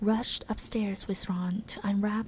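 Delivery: plain reading voice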